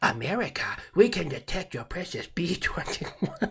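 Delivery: put-on Chinese accent. Trying the accent live for the first time, in a Chinese accent. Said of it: "I've never done the live Chinese accent, but fuck it, we're gonna do it".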